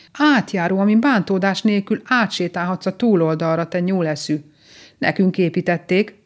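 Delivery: ordinary delivery, nothing marked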